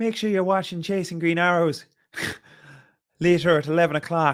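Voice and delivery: attempted Irish accent. Running through accents one by one, the speaker tries an irish accent. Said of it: "Should I do an Irish accent?".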